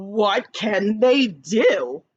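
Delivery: rising tune at the end on "do". Showing how punctuation should sound, the speaker uses rising question intonation. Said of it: "I have to make it sound like a question".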